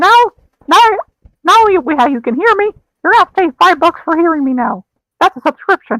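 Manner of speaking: squeaky swooping voice. Talking to the other person listening, in a Mickey Mouse voice. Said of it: "five bucks to hear Mickey talk".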